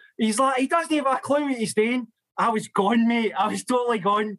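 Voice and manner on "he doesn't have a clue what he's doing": mock shouting, higher pitch. Retelling how a former coach shouted from the side of the park: imitating a coach shouting. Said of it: "he's shouting".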